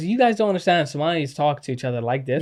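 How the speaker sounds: plain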